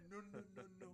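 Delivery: put-on African accent from Congo. Joking with co-hosts about a voice you suddenly hear, doing a Dikembe Mutombo impression. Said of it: "a Congolese African appear".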